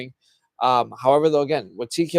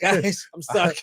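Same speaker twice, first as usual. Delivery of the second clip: put-on old man voice, pitched higher; 5 semitones higher than usual. Imitating Teddy Long stuck and too old: imitating Teddy Long as too old. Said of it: "He'll be like".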